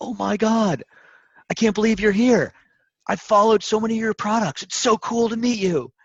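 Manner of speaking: very high, gushing, starstruck fan voice.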